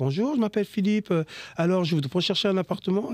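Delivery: put-on, polished, native-sounding French accent. Acting out a phone call asking about an apartment: put-on native French voice. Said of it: "tu prends une voix de français".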